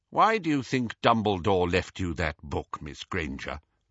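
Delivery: ordinary delivery, nothing marked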